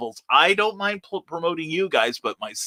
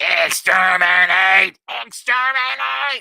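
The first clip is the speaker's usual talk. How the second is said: screamed like a robot; 4 semitones higher, 4 dB louder than usual. Attempting to scream like a Dalek for a hashtag: Dalek voice. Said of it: "scream like a Dalek".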